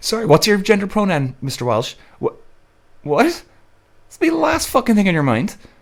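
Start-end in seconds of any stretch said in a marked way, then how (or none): 0.0-1.9 courteous, polite, pitched-up clerk-like voice. Speaker imagining being asked pronouns while injured at a hospital, imitating a hospital worker. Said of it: "Imagine walking in with a broken arm".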